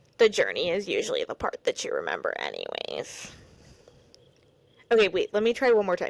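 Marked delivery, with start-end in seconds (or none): 0.2-3.3 very low, swooping pop-star voice. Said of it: "my [name] impression".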